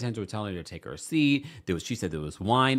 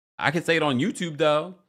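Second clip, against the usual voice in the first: plain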